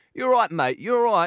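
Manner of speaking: high-pitched, typical East London geezer accent. Imagining how a typical geezer would talk, in a put-on east london accent. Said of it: "your typical East London geezer, like".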